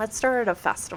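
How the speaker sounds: plain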